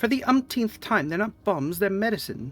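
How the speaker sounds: put-on British accent. A player voicing a character confronted by bounty hunters, in a British accent. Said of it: "she became British mid-sentence".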